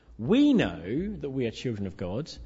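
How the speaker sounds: heavy stress on the word we. Demonstrating one way to read a letter's passage, with stress on we. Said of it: "we could read it like this. ... It's always too easy to put the emphasis on us".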